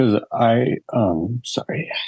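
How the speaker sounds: emotional, choked up, near tears, voice rising high. A podcast guest, asked why he came on the show, choked up. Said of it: "I didn't know you were going to get emotional".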